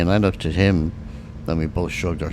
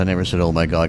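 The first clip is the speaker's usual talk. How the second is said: plain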